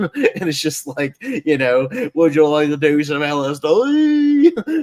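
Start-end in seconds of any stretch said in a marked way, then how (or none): 2.1-4.8 loud, silly, hammed-up bad British accent. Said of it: "does this nonsense voice for [name]".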